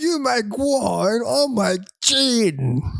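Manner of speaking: terrible fake British accent. Competing over who's the worst father, in a bad British accent. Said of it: "It's the worst British accent you've ever heard".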